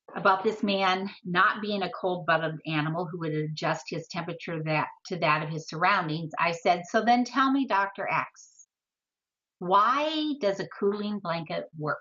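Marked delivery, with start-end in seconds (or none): none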